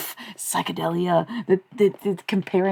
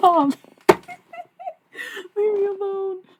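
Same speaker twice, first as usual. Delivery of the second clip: very high voice with laughter breaking through. Reacting to the chat, laughing while talking. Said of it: "I'm not trying to laugh".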